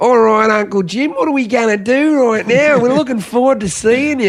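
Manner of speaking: high, laid-on put-on Australian kids' accent. An uncle imitates his australian nephews and nieces talking to him, australian accent. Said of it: "they're like sound so Australian to me".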